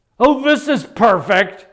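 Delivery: straining through pain. Retelling what they said on the floor with a hurt ankle, imitating speaking through pain. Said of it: "through my pain".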